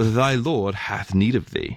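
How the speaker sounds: put-on proper English accent. Storyteller voicing an angel addressing a raven, in a proper English accent. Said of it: "as an angel, he had a proper English accent".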